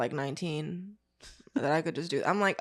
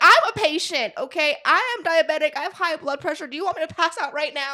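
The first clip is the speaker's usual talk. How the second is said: put-on scream, higher and louder; 9 semitones higher, 6 dB louder than usual. Retelling how mom screamed at an expo table: imitating mom screaming. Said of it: "she's screaming in the middle of N R G Center".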